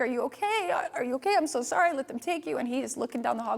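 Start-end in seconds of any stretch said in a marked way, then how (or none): 0.0-2.6 put-on crying, high-pitched, tearful and gushing. Retelling finding the son when the door opens: retelling crying apology. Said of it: "and I started to cry".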